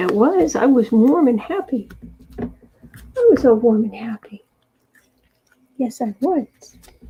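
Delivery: voice speaking as a cat. Cuddling the cat and speaking its thoughts aloud: voicing the cat. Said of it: "He's like".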